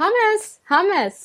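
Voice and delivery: mock squealing, very high-pitched shout. Actor recalling going in to say an odd line, retelling a yell. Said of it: "And I went in and I just yelled".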